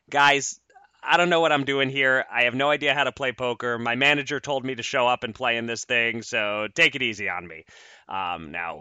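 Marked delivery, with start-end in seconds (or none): none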